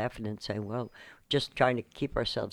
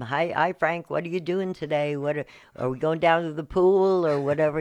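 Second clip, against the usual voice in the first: raised, loud call; 5 semitones higher, 7 dB louder than usual. Retelling calling up to someone about the pool: imitating own past yell. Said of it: "yell up at him".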